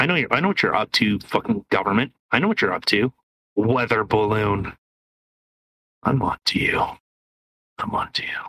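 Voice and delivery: deep, suspicious, accusing voice. Ranting at the government about the weather balloon: deep voice. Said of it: "your voice went so deep".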